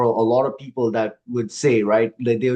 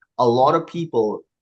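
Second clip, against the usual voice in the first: ordinary talk, nothing marked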